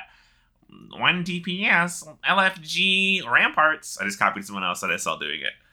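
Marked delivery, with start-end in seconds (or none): 0.9-4.0 high, slow dragged-out callout. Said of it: "I spammed the hell out of the fucking chat".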